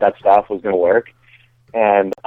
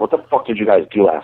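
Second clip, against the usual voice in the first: mock angry outburst. Retelling a friend's wife answering the phone: imitating someone mad. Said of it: "She was, like, mad at me".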